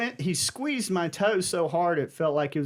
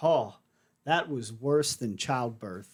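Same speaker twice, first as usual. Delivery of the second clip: mock-serious deadpan delivery, lower; 5 semitones lower than usual. Retelling a reply to a nurse's joke, imitating a deadpan serious line. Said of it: "tried to say it as serious as I could".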